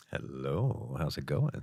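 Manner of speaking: deep, very low, soft, sultry podcast-style voice. A podcast guest greets the host right after being introduced; sultry deep podcast voice. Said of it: "what a sultry".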